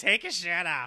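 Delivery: put-on creepy, elderly voice with a New York accent. Discussing horror sequels, quoting a line in a creepy old New York landlord voice. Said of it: "It's like a creepy old, like, landlord in New York".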